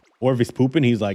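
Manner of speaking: ordinary talk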